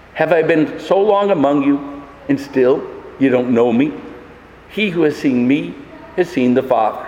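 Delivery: deep, very sad, sorrowful grieving voice. Retelling a quoted reply, acting out a very sad voice. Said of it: "in a very sad voice".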